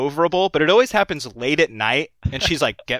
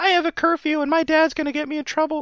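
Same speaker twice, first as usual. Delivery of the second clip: put-on very high, girlish, teenage girl voice; 13 semitones higher than usual. Retelling an officer mimicking a seventeen-year-old girl he pulled over: imitating a teenage girl's voice. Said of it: "he literally mimed, mimicked this girl in that voice".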